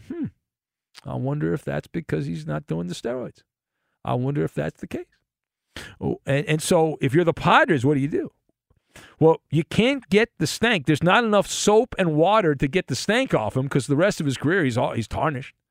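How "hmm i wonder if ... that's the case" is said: quiet half-whispered aside. Imitating people who talk about a home run slump: imitating a hushed half-whisper. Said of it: "people will whisper in hushed tones and say".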